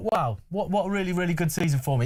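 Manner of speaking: usual speaking voice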